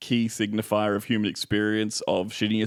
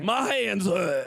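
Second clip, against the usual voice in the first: very high, slow impression voice. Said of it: "I can't do Danny DeVito too well".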